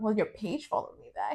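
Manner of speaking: breezy, offhand, casual, hushed, nearly whispered. Retelling what a woman said after following her back, in a mock-casual tone. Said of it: "she said it like so casually".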